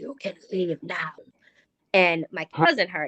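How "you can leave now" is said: raspy man's voice, quieter. Telling of entering a room and quoting the voice heard there: raspy man's voice. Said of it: "you can hear a raspy man's voice go".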